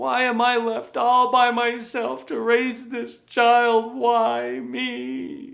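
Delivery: shrill, whiny complaining tone with "me" drawn out. Showing how the victim side complains, in a whiny voice. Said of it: "Usually in a whiny voice".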